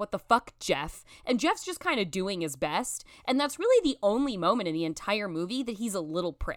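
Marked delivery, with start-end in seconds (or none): 0.0-1.0 put-on angry outburst. Retelling how the group lashes out at Jeff: imitating someone lashing out. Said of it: "receive everyone's lashing out".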